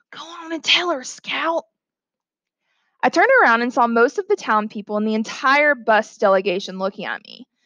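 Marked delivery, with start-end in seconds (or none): 0.2-1.7 hushed, high-pitched, urging half-whisper. Someone among staring onlookers, half-whispering to the narrator. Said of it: "someone whispered".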